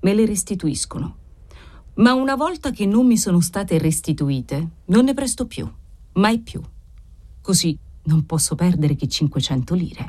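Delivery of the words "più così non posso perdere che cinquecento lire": plain reading voice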